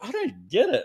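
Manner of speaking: very high-pitched, laughing, self-mocking voice. Retelling being alone and anxious before a voice note: retelling laughing at oneself. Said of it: "I'm laughing at myself going".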